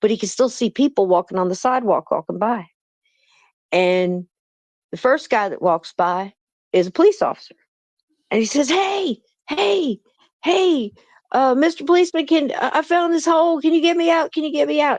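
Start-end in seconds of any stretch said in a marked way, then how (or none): 8.7-15.0 very high, screaming, pleading yell. Voicing a man stuck in a hole calling to a policeman: yelling and screaming for help. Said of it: "And he's yelling and screaming".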